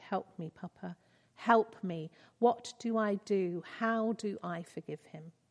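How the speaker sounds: pleading, begging, imploring. Reading a man's plea to Papa after he has wept: pleading. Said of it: "he pleaded".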